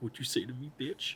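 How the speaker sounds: breathy cartoon dog voice. Joking with the other speaker about Goofy: Goofy impression. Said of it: "It's my goofy impression".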